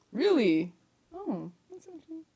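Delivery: very high, startled, shocked disbelief. Reacting to the other speaker's yes answer, sounding shocked. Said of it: "Why do you sound shocked?".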